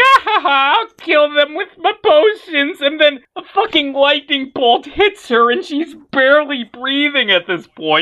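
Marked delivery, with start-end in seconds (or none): 0.0-2.8 high witch voice, cackling laughter through the words. Game master voices the witch on her broomstick, cackling.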